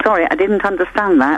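ordinary talk

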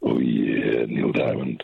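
very deep, very low, rumbling put-on voice. Joking with others about a lowered angry voice, answer in a voice lowered to brown noise. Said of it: "What the hell was that?".

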